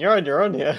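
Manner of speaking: smug, self-satisfied, dismissive tone. Voicing a character who leaves another alone: smug. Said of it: "really smugly going".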